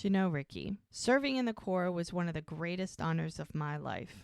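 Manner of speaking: ordinary delivery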